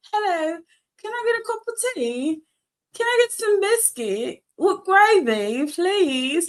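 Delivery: put-on British accent. Retelling a childhood habit of talking to family in a put-on British accent. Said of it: "pretend I'm from British".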